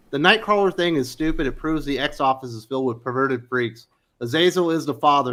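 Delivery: plain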